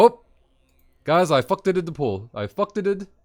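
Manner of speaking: put-on high, loud Brazilian accent. Recalling a Brazilian paladin in the guild apologizing to the group, imitating his Brazilian accent. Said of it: "with the Brazilian accent".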